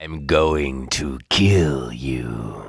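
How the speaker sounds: creepy character voice. A game character speaking in the English dub, creepy Bates voice. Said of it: "aquela voz super cabulosa".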